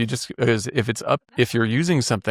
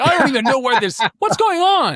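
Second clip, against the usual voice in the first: put-on irritated, annoyed tone, higher and louder; 5 dB louder than usual. Retelling first seeing layers added to Photoshop: imitating own past annoyance. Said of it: "I was all pissed off".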